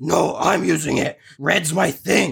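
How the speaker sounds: stubborn, slow, rough, drawn-out delivery. Voicing a hero arguing over a bowling ball: Crimson Crusader arguing. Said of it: "and he goes".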